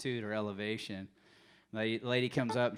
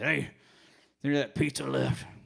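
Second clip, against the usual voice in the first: raised, rough, rasping, creaky voice; 3 semitones higher, 7 dB louder than usual. Retelling a late-night question from Al: imitating Big Al's voice. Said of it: "He talked like this".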